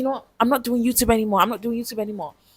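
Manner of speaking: acted-out angry outburst. A speaker recalling getting angry about stammering, retelling own angry outburst. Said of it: "I would get angry. I'll be like".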